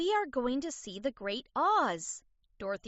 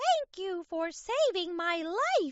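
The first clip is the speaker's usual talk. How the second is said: tiny, high, squeaking little mouse voice; 7 semitones higher than usual. Narrator reads the mouse's line after the Tin Man's rescue, squeaky mouse voice. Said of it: "the mouse squeaked".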